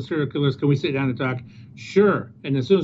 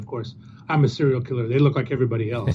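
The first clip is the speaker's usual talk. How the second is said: put-on deadpan delivery, much lower pitch; 3 semitones lower than usual. Retelling an Addams Family scene, the speaker quotes Wednesday Addams answering a lady: imitating her deadpan. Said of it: "she goes, deadpan".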